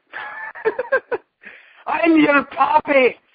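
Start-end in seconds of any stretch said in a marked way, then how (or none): 1.8-3.1 Irish-accented voice, high and slow. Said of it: "I just made [name] sound Irish".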